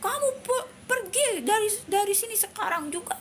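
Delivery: high, furious, very emotional voice.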